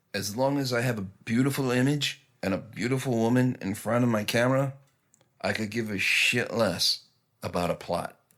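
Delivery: put-on thick Italian accent. Speaker quoting a guest lecturer from film school: Dario Argento's thick Italian accent. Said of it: "he said in this thick Italian accent".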